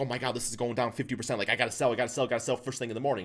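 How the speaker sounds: mock fearful panic. Retelling how sellers react to a falling stock: imitating panicked stock sellers. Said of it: "people are seeing all this fear".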